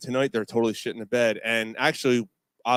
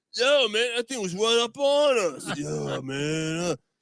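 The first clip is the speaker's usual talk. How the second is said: put-on very high-pitched drunken babbling talk; 9 semitones higher than usual. Retelling a campsite bear video, imitating drunk campers. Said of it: "you can tell they're drunk".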